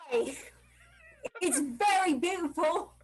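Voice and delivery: put-on, sing-song, leaned-into Cockney British accent. A performer told to use more Cockney British accent, in a Cockney British accent. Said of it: "more Cockney British accent".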